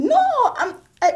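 high, pleading voice. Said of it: "and I'm like".

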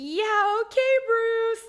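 very high, loud, mocking, humoring tone.

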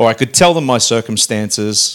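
ordinary talk, nothing marked

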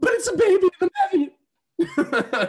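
overjoyed, very loud, high, swooping, drawn-out excitement. Acting out a movie scene as the pregnant girl: acting out an excited mother-to-be. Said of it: "I'm gonna be the girl".

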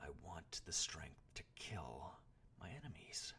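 spoken through gritted, clenched teeth. The boy answers the man in lingering frustration, through clenched teeth. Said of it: "answered through clenched teeth".

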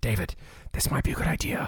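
whispering in character. Speaking in character, whispering a plan into a companion's ear: whispering in character. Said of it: "and I whisper in his ear".

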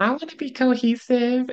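tiny, very high little voice. Retelling what she said after hearing his reason, in her little voice. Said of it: "she goes in her little voice".

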